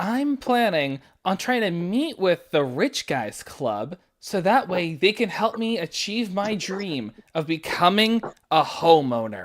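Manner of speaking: soft, hushed, secretive half-whisper. Half-whispering to a fellow prisoner so the guard doesn't hear: half-whispering in character. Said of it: "I'm going to whisper this so the guard doesn't hear".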